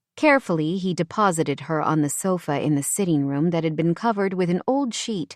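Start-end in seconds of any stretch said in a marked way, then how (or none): none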